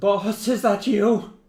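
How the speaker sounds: very high, loud, quavering, trembling voice. Hans, a ghoul called by name, answers from inside in a trembling voice. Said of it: "almost like a trembling voice".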